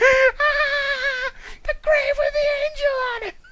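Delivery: shrill, high, loud screech, drawn-out "ah". Reading a second-person story aloud, answering the grandmother: screeching. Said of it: "you screech".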